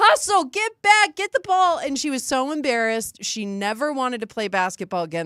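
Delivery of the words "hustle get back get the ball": shrill, very high, loud hollering. Retelling sitting on the floor with crutches at a children's game: retelling own yelling at kids. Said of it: "I was yelling at those children".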